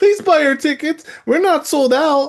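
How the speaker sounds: play-acted, very high, groveling voice. Speaker mocks the company begging fans to buy tickets, mock groveling plea. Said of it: "on their knees groveling for people".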